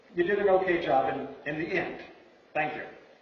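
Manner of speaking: ordinary talk, nothing marked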